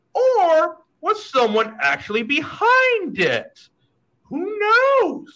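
weird, spooky put-on voice, very high and eerie. Host addressing viewers before showing a video, in a weird, creepy voice. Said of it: "I'm talking some weird, creepy voice right there".

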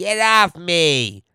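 strange, odd, nasal way of talking. Describing a man who runs away when tickled, imitating his nasally odd voice. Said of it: "this is how he talks".

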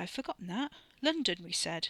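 ordinary delivery

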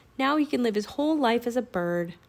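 ordinary delivery, nothing marked

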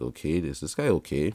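plain

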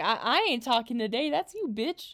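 ordinary delivery

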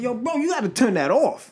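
high, yelled-out call. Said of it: "I yelled out".

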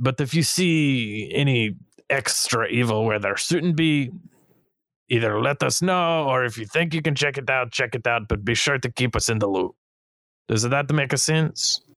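bad French accent. Voicing a character who briefs an adventuring party: stereotypical French accent. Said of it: "I speak French common".

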